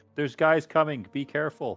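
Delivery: shouting. A character spotting enemies running up, yelling a warning. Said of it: "and he yells out".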